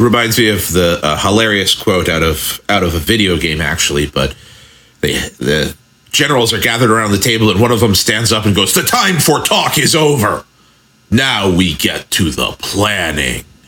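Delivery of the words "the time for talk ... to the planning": mock-ominous, much slower. Retelling a video game general who stands up at the table, quoting an ominous general's line. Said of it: "It's delivered so ominously".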